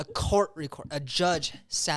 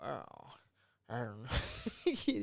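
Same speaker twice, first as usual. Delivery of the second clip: put-on low, swooping, loose, swaying drunken drawl; 4 semitones lower, 8 dB quieter than usual. Imitating the actor once he became the pirate captain: Jack Sparrow impression. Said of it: "my, um, Jack Sparrow impersonation".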